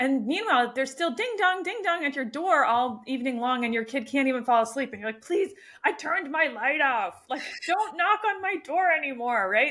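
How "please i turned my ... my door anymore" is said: put-on fed-up, grumbling cranky old voice, pitched up. Acting out telling trick-or-treaters to stop knocking: imitating a cranky old neighbor. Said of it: "you turn into, like, cranky old neighbor".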